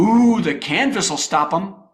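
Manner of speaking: put-on, very sarcastic, laid on thick. Speaker recounting what the zookeepers said after the lions escaped, mock-sarcastic zookeeper. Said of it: "said in a very sarcastic tone".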